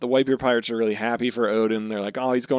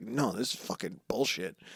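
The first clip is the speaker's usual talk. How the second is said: put-on miffed, annoyed grumbling; 3 semitones lower, 10 dB quieter than usual. Retelling two pirates' reaction, acting it out: mock miffed complaint. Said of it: "they're so fucking miffed".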